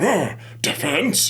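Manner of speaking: put-on very high, elderly old man voice. Directing a voice actor who played the judge, showing the voice: old man judge voice. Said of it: "my old man voice".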